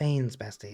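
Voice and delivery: put-on sad, sorrowful tone. Reading a chat message aloud the way it felt: mock sad tone. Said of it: "felt like it was said with such sadness".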